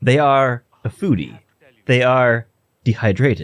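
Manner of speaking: speech-synthesizer computer voice. Describing how Diana talks to her, the speaker imitating Diana's AI voice. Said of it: "in the most A I uh, A I generated voice".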